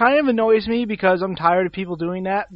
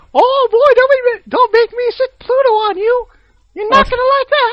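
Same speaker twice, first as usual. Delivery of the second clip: mock-angry cartoon voice, much higher, louder; 8 dB louder than usual. Answering someone who just shouted: angry Mickey Mouse voice. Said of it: "You sound like pissed off Mickey Mouse".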